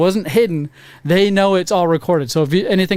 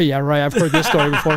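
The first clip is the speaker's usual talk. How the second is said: put-on knowing chuckle through the words, laughter in voice; 3 semitones lower than usual. Retelling the desk clerk's reaction: imitating someone chuckling. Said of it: "she chuckles at me like".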